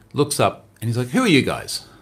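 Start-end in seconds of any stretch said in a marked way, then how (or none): 1.0-1.8 snooty, posh upper-class British voice. Retelling how a man in a suit questioned visitors: imitating a snotty british man. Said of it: "In a very snotty British way".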